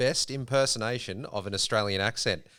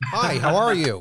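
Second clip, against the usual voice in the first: put-on American accent, raised pitch; 4 semitones higher, 7 dB louder than usual. Speaker asked by another to show an American accent, doing an American accent. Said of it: "I want to hear your American accent".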